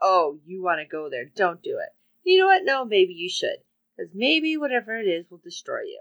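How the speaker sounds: put-on mocking laughter. Recounting a story, acting out how he answers her question: retelling mocking laughter. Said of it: "he's laughing at her like".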